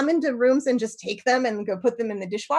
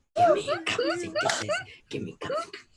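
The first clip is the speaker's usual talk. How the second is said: put-on goblin voice, much higher, quieter; 6 dB quieter than usual. Joining in the bit, in a cup goblin voice. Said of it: "she's going to do her cup goblin impression".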